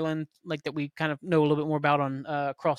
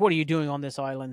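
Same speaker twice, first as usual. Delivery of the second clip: imitated British accent. Retelling what a man in military fatigues asks: put-on british accent. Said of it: "Speaking in a British accent".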